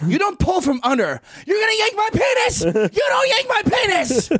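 very high, swooping, rising, shrill shrieks. Retelling what a man finally yelled at her, retelling a high-pitched scream. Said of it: "he's screaming like high pitched".

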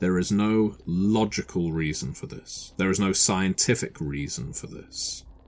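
ordinary delivery

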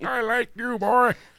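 put-on old man voice. Acting out an old man's reply to a teasing stranger: imitating an old man. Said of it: "an old man".

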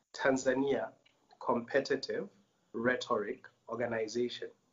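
slow, deliberate, each word carefully spelled out. Speaker gives their organization's full name, saying it a little slowly. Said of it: "So I'm going to say it a little slowly".

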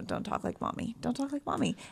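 soft, hushed delivery. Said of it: "I'm like".

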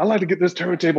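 put-on fast nervous talk. Retelling asking the guy for a turntable: imitating own fast nervous talk. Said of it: "I'm talking all fast and nervous".

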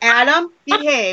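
scolding, motherly telling-off mom voice. Telling Adam to behave, in a mom voice. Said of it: "That's my mom voice".

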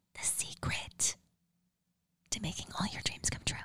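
secretive, hushed whisper.

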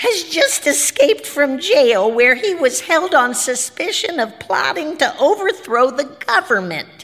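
harsh, high-pitched, bird-like grackle squawking. A ballerina on television reads the announcement aloud in a grackle squawk. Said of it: "said the ballerina, ... she said in a grackle squawk".

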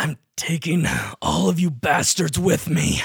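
swooping, savage, threatening snarl. Narrating a man pushing himself to the limit, the speaker gives his line snarling. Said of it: "he just like snarls out".

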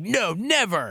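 mock sarcastic, tongue-in-cheek, high-pitched tone. Retelling a father's answer to an interview question, retelling a sarcastic no. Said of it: "But he said it in a sarcastic manner".

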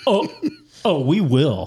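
very slow, drawn-out, swooping condescending delivery. Answering a friend's request to talk condescendingly: mock condescending tone. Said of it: "Can we talk in the condescending tone that Tom uses?".

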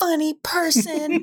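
mock sassy, high-pitched, taunting little voice. Repeating a little girl's movie insult: imitating a girl's sassy insult. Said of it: "She says with so much sass".

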